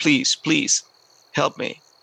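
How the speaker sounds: put-on imploring, pleading, begging voice. Retelling begging a reluctant man for help on a mountain; mock pleading. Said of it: "pleading like this".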